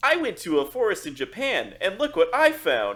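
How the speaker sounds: bad, slow, sing-song fake AI narrator voice. Imitating a TikTok video about a forest in Japan: bad AI voice. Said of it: "bad, like, uh, A I voice".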